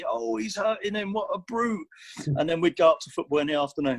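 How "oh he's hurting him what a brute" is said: loud, high-pitched screaming. Recalling afternoons watching wrestling on the telly, retelling Nan screaming. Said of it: "Nan would go screaming at the telly".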